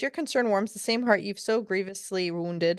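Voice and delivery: ordinary talk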